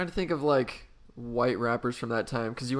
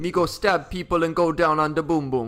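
loud, playful, put-on Jamaican accent; 3 semitones higher, 6 dB louder than usual. Trying out a new voice while chatting, speaking in a put-on jamaican accent. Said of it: "That's a fun voice".

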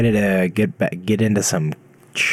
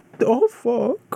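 spooky ghost voice, very high. Voicing a ghost that just crashed into a wall, in a ghost voice. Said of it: "That's my ghost voice".

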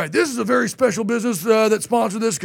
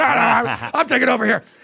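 put-on drunk man's voice. Retelling the drunk man shoving him aside: imitating a drunk man. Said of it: "in a suit that's really drunk".

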